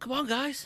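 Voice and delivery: put-on hoarse voice. Imitating the old coach urging the team on: imitating a hoarse coach voice. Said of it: "With his hoarse voice".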